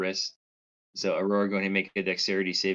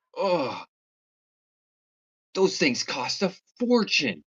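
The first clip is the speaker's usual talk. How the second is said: really angry, fuming outburst, high and swooping; 8 semitones higher, 4 dB louder than usual. During a game turn, the narrator voices Wellenveer in an angry outburst. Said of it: "really angry about it".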